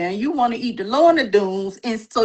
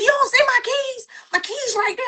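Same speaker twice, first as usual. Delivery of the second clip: mother calling out, voice pitched up; 13 semitones higher than usual. Retelling a mother asking her child about her keys: imitating mama. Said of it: "And she's like".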